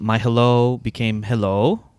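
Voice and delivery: imitated Filipino accent. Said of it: "I went into full accent mode".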